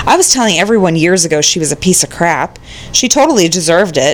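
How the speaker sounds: normal talking voice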